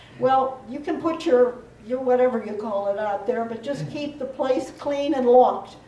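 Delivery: ordinary delivery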